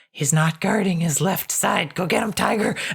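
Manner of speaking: whispered character voice. Game master voices Windred giving a player sword-fighting advice, whispering. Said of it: "And then she whispers to you".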